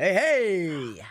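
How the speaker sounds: laid-back, cool greaser voice with hey stretched out. Asked to do a best Rocky Rococo impression: Rocky Rococo impression. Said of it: "You sounded like the Fonzie".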